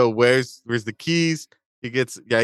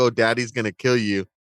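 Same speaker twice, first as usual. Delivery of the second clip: whispered line. Recounting a film scene where a girl whispers in her mother's ear, retelling a whisper. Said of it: "she whispers like um in his in her ear".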